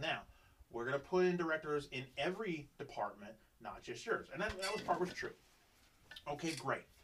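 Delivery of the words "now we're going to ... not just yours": normal talking voice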